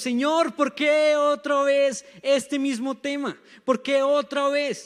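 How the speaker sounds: tearful pleading cry.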